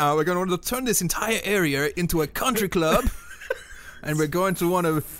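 fake half-German, half-English accent. Voicing a Nazi character's plan for the area, fake half-German, half-English accent. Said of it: "This is my half-German, half-English accent".

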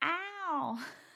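horrible, very high Cockney, long drawn-out high ow. Recalling a scene from My Fair Lady: imitating Audrey Hepburn's Eliza. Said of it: "horrible, like, Cockney accent".

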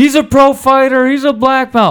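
very high-pitched, loud yelling. Retelling a training partner shouting during a roll: imitating Ray yelling. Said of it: "Ray starts yelling".

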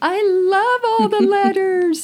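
high, loud gushing impression. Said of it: "She's like".

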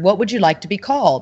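ordinary delivery

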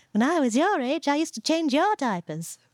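put-on high, eerie, creepy small-child voice. Reading aloud a kid's quoted words from a book, in a creepy little child voice. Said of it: "and your creepy little child voice".

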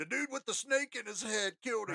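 put-on drunk man's high, mild half-holler. Telling a story, quoting a drunk guy who was screaming; imitating his scream. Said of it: "this drunk guy screaming".

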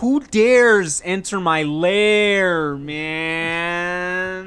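huge, giant booming voice, very slow and stretched. Voicing a creature behind a door as a knock comes: giant booming voice. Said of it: "giant booming voice that just says".

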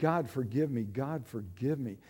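tearful, pleading voice, crying. Retelling crying out to God, gushing tears on the floor: retelling a tearful plea. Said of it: "gushing tears and crying".

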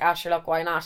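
normal talking voice

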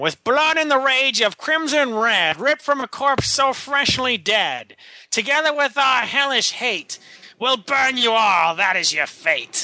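put-on dark, old-fashioned voice. Asked to go darker but still old-timey, performing the verse in a dark old-timey voice. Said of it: "You sound like the Penguin".

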